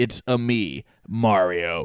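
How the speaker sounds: very slow, plain, angry delivery in normal voice. Imitating the new trailer's gritty reboot Mario: imitating Chris Pratt as angry Mario. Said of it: "he's like, angry and he's like".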